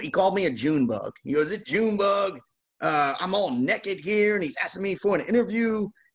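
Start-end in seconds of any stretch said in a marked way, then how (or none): 1.5-5.9 put-on high-pitched Southern Arkansas accent. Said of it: "So Lee in his Arkansas accent".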